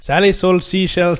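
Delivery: attempted, put-on Irish accent. Asked by the others to say a given sentence, trying it in an Irish accent. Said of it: "Say it in an Irish accent".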